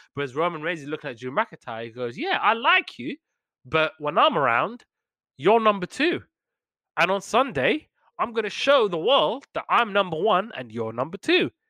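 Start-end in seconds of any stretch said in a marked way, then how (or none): 2.2-11.5 smug, condescending, pitched-up, boastful taunting tone. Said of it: "the way he was telling it in that condescending".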